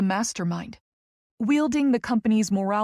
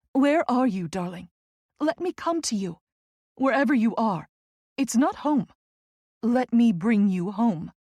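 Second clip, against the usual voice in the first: pleading, begging tone. Reading a novel aloud, a character on the phone begging Tess to return: pleading. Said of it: "she pleads".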